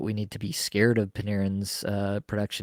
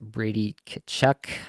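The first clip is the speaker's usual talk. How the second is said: slow, deliberate, careful delivery. Naming the next pick so everyone gets the pronunciation, Brady Kachuk said slowly. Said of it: "Said it intentionally slowly".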